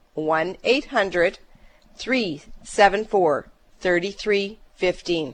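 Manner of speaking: slow, deliberate, carefully spaced, unhurried delivery. Repeating the call-in phone number for listeners: said slower. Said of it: "say it slower".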